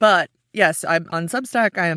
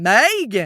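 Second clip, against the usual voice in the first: Megan, first syllable leaned on; 3 semitones higher, 3 dB louder than usual. Recalling how a grandmother called her name, stress on first syllable of Megan. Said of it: "all of the emphasis was on that very first syllable".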